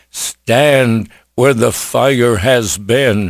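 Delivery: ordinary delivery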